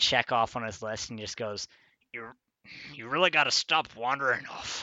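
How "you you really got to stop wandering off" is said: grumbling camp master voice. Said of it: "grumbles to himself".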